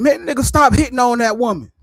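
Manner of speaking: high, hollered call-out. Retelling yelling at a man from a car window: imitating own past yell. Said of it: "I let down my passenger window and I yelled".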